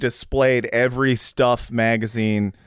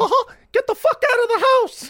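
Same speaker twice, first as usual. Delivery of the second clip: squeaky voice pushed way up high. Imitating Mickey Mouse trying to evict somebody from the house: Mickey Mouse voice. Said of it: "you had a Mickey Mouse impression".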